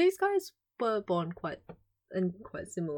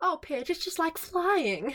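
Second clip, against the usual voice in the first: put-on high voice of a grown young woman; 5 semitones higher than usual. Reading a story aloud, voicing a girl's words to her sister, like a young woman. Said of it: "That's the perfect voice, except it needs to be more childish".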